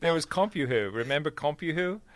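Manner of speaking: put-on slipping into British accent. Recalling an old dial-up chat service: imitating a British accent. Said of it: "I'm going into a British accent".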